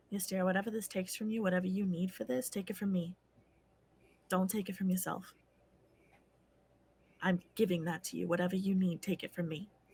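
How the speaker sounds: very quiet, soft, hushed, under the breath. In a tabletop game, a character walks forward and speaks to Ystera, very quiet. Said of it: "say very quietly".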